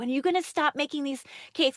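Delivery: playful, joking holler. Recalling the grandfather teasing the grandmother about her cakes, retelling a joking scream. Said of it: "My grandfather would joke and scream at her".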